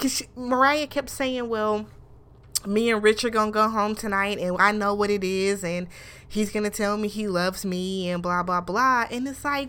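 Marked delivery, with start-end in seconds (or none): none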